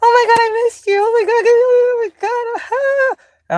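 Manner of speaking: play-acted, very high, over-excited gushing voice. Retelling how the old self greeted people: imitating own past gushing self. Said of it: "The old me".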